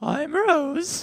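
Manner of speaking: put-on voice pushed very high. Obliging another speaker's request to pitch the voice up, pitched-up voice. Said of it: "can you pitch your voice up?".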